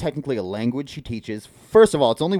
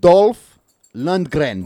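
very loud put-on Russian accent; 4 semitones higher, 8 dB louder than usual. Getting into his Russian accent to give a name, put-on Russian accent. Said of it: "Let me get into my fucking Russian accent real quick".

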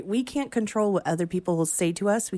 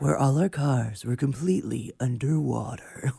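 movie trailer narrator voice, much lower; 5 semitones lower than usual. Doing a requested bit, movie-trailer voice. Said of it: "do the movie trailer in a world".

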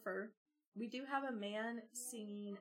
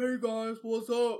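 very loud, full-volume, booming voice; 14 dB louder than usual. Retelling how a classmate talked after switching to bass: imitating a newly deep bass voice. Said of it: "And he's like".

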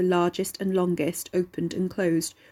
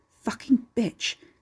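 grumbled, cursing mutter under the breath; 4 semitones higher than usual. A man holding his injured hand curses, muttered. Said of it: "the man muttered".

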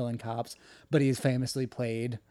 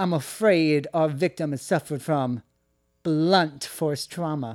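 slow, drawn-out speech with a slight lisp; 3 semitones higher, 4 dB louder than usual.

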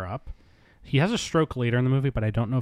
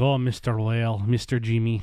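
put-on Scandinavian-sounding accent. Imitating the maid Hannah from a movie: imitating the maid Hannah's accent. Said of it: "who just walks around talking like this".

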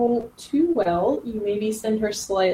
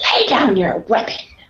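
loud, shrieking, screeching delivery; 6 dB louder than usual. Voicing a general who rushes at the listener's character, giving a screeching command. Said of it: "she screeches and she just says".

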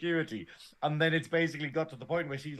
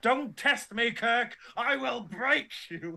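mock scream, much higher; 8 semitones higher than usual. Retelling a scene where a character is dragged out, imitating Spock screaming. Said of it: "And he's screaming".

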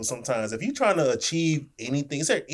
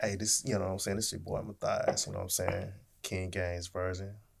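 put-on seductive voice, very low and very quiet; 8 semitones lower, 12 dB quieter than usual. Introducing yourself on the podcast, in a put-on sexy voice. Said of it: "He had to put his sexy voice on".

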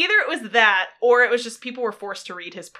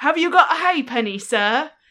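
put-on British street urchin accent; 3 semitones higher than usual. Playing a Dickensian street orphan, in a put-on British street accent. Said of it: "A Dickensian street orphan".

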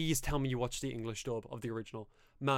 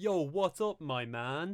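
very slow, stilted, clumsy English; 4 semitones higher than usual. Recalling a man walking up to a guy to greet him, imitating awkward English. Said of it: "in like the most awkward English I've ever heard".

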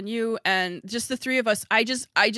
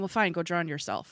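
mock snorting, lower, quieter, faster; 4 semitones lower, 5 dB quieter than usual. Retelling your mother's reply to you as a child, imitating mom snorting. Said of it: "my mom snorting and going".

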